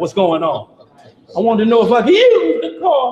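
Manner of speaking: put-on voice breaking like a teenager's, cracking. Imitating a son asking to use the car: cracking teen voice. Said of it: "that voice crack is a sign".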